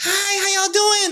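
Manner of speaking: squeaky, very high-pitched voice. Telling a story, speaker imitates a man greeting a group in a very high-pitched voice. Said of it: "he said it in like the highest pitch".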